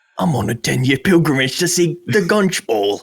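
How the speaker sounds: attempted refined posh British accent. Trying out a character voice for a game: attempted refined british accent. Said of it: "can I do a refined British accent?".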